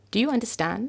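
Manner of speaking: lifting, rising tune at end of "understand". Teaching yes-no question intonation, rising on "understand". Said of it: "my voice is going up at the end".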